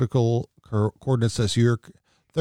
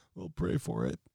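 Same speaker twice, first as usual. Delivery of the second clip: hushed, soft, high-pitched, vapid politician-style murmur; 5 semitones higher, 13 dB quieter than usual. Doing a quick impression right after announcing it: Mike Pence impression. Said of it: "here's my Mike Pence impression".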